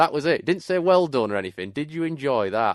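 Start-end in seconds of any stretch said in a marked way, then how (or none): 1.7-2.7 thick, slow, broad Yorkshire grandad voice. Quoting a granddad at the door of the van, in a very strong Yorkshire accent. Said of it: "in the most Yorkshire accent".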